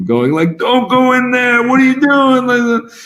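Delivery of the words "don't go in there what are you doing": put-on drunken, shrill yelling, pitched way up. Describing a packed late-night theater crowd, imitating drunk people yelling at the screen. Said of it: "drunk people yelling at the screen".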